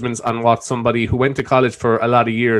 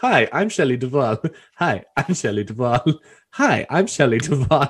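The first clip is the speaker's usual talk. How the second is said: repetition like a clip stuck on loop. Describing a YouTube compilation of her: Shelley Duvall impression. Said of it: "it's her going like".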